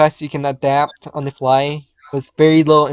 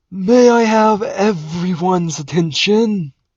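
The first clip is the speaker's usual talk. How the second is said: put-on slow, pitched-up elderly voice; 5 semitones higher than usual. Voicing the headmaster calling for attention: old headmaster voice. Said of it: "Why does he sound so old".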